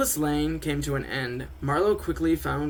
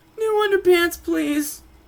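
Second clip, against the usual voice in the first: tiny, squeaky, very high voice; 7 dB louder than usual. Reading a story, after a scare passes, a character speaks in a squeaky voice. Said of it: "In a squeaky voice".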